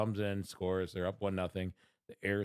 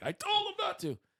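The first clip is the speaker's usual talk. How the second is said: put-on furious ranting voice, higher pitch. Retelling what a furious fan said at the game: imitating Uncle Fister being furious. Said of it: "He was furious. He's like".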